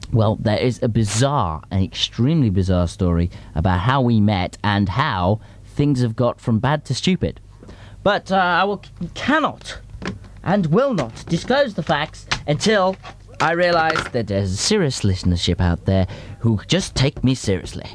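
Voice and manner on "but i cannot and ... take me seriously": acted Victorian gentleman voice, pitched slightly high. Addressing the listeners of his show, in an Algernon voice. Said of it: "I did an Algernon voice of the importance of being earnest".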